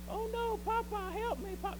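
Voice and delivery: very high, shrill cartoon damsel cry. Retelling the cartoon where she is taken and cries for Popeye, Olive Oyl voice. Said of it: "That's my best olive oil voice".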